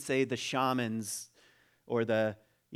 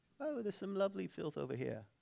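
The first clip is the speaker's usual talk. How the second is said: poor put-on English peasant accent, very soft, hushed; 6 semitones higher, 10 dB quieter than usual. Retelling a comedy scene, the speaker plays a peasant in a bad Monty Python peasant accent. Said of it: "I don't really have a very good English accent".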